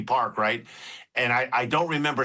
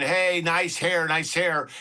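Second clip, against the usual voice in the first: mild, jeering, heckling crowd-style call; 5 semitones higher than usual. Retelling what people at a ballgame screamed at an outfielder, imitating their scream. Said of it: "all these people were screaming".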